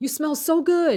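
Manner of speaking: high mock holler, as if across a distance. Retelling how a man in the airport security line called out, retelling a yell. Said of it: "he yelled out to me".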